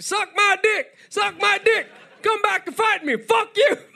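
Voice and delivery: very high, rowdy, shrieking, jeering shouts. A chained-up prisoner kicking around in the cell: rowdy prisoner yelling. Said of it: "I'm being rowdy in the cells".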